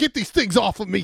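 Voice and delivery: put-on furious, very high, raspy, shrill yell. Retelling a competitor who can't take his goggles off: imitating a furious yell. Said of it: "He's so furious".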